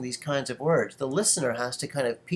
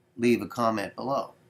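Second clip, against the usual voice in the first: voice dropped slightly lower in pitch; 4 semitones lower than usual. Demonstrating a request, leaning closer to the microphone: slightly lower, slower voice. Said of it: "I'm lowering the pitch of my voice just a little bit and I'm slowing down just a little bit".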